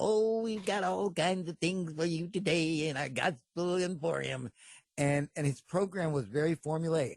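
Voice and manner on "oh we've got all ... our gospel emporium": slow, drawn-out, folksy little country preacher voice. Describing a preacher's TV show and quoting him: Ernest Angley voice. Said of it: "he talked like this".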